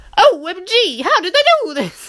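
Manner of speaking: silly, annoying, very high, swooping put-on voice. Retelling how audiences first reacted to the film: annoying put-on voice. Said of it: "Are my voices getting annoying?".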